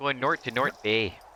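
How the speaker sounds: corny, silly, put-on Canadian accent. Retelling a host's corny joke about a town up north: put-on Canadian accent. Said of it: "put on a Canadian accent".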